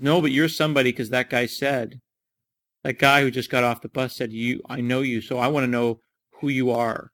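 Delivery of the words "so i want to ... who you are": ordinary talk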